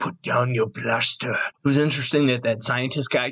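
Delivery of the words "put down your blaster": put-on threatening German accent. Recapping a Mandalorian scene, speaker quotes Werner Herzog in a menacing German accent. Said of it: "so menacing with his German accent".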